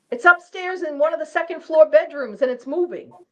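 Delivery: high-pitched, alarmed screaming. Retelling what a psychic said during a seance: imitating someone screaming. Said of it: "she starts screaming".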